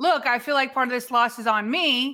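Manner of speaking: ordinary talk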